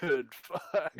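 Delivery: groggy, sleepy just-woken dinosaur grumble. Voicing a dinosaur on screen that is just waking up: groggy waking-up voice. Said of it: "just waking up".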